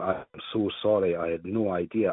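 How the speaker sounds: ordinary delivery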